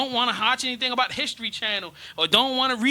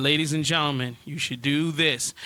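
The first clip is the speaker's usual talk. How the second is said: level, expressionless flat monotone with no lift; 9 semitones lower than usual. Demonstrating how speaking to the camera would sound, in a monotone. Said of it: "speak in a monotone fashion".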